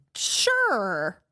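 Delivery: lukewarm, hesitant, drawn-out noncommittal sure. Contrasting an eager yes with a maybe-answer, demonstrating: noncommittal, hesitant 'sure'. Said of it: "It's important the way you said sure".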